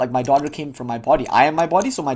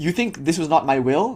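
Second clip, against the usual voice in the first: ordinary talk, nothing marked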